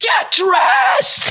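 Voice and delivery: high scream. Retelling a fall off the bed: imitating own past screaming. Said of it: "And I'm screaming".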